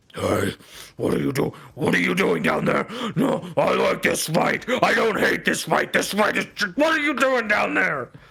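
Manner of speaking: booming, loud, swooping growl from below. Narrator voicing a voice from below during a fight, loud and growling. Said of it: "some some loud growling voice from below".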